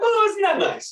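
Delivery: high, sing-song, mock-pleasant delight.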